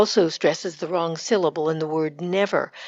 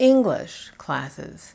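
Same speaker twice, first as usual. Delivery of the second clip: slow, heavy stress on English, classes dropped in pitch. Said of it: "We would put the stress on the descriptive word".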